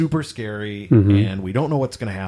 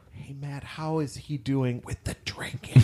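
whispered, discreet and hushed; 4 semitones higher, 7 dB quieter than usual. Retelling a question from the director of HR: imitating someone whispering. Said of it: "He kinda whispered it".

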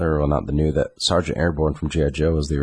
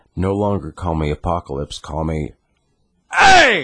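very loud, very high, aggressive, drawn-out shrill yell; 2 semitones higher, 4 dB louder than usual. Acting out how a name-change announcement sounds in their head, mock-aggressive and loud. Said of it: "really just aggressive, loud".

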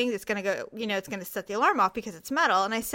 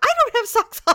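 indignant, very high, raised tantrum outburst; 13 semitones higher, 9 dB louder than usual. Retelling complaining to an official about removing boots: imitating own angry tantrum. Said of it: "I was literally throwing a temper tantrum".

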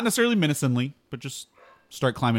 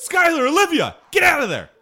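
very high, loud, swooping yell in character; 7 dB louder than usual. Stopping the horse and warning companions in character: yelling in character. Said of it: "and I yell and I go".

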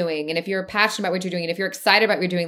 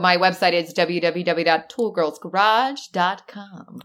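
put-on radio announcer voice. A guest, asked where everyone can find her, answers in announcer voice. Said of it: "That's like my announcer voice".

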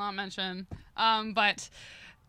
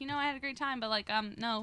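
ordinary talk

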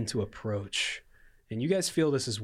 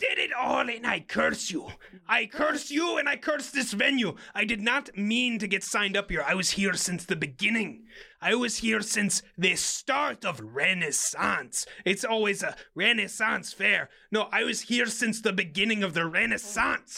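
very high-pitched put-on hag voice; 11 semitones higher than usual. A game master voices the hag, speaking to the players' characters, in a hag voice. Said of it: "I am the hag of [name]".

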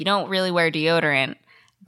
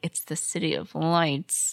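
mock muttering under the breath; 6 dB quieter than usual. Recapping a story, quoting a man's aside after the boss speaks, retelling a mutter under breath. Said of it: "under his breath".

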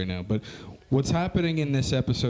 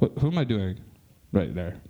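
normal talking voice

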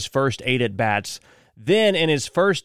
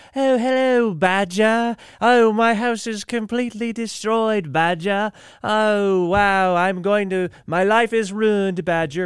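mild, unbothered put-on English accent, high and slow; 7 semitones higher than usual. Retelling animal news about a woman whose home was wrecked: put-on English accent. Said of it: "because of the English accent".

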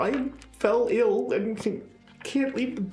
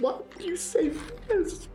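tearful, upset voice near ugly crying; 6 semitones higher, 3 dB quieter than usual. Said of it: "starting to ugly cry now".

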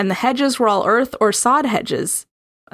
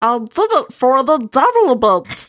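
words mangled, barely intelligible, nearly impossible to follow; 3 semitones higher than usual. On the podcast, the speaker shows off a Stitch voice. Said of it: "That's a very good stitch, but it's also incomprehensible".

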